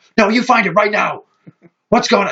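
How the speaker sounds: put-on frantic mother voice. Retelling how a frantic mother woke the speaker at night: imitating a frantic mother. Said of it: "she is fucking frantic".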